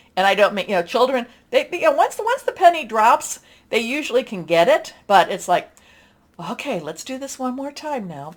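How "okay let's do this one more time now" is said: very quiet, soft, gentle, patient voice. Describing patience like dealing with a child, the speaker demonstrates: soft voice. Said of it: "You're putting on your your soft voice".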